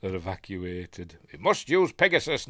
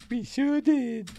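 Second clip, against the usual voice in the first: put-on very high-pitched woman's voice; 14 semitones higher than usual. Retelling a film scene where he fakes her reply: imitating him putting on her voice. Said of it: "so he puts on her voice".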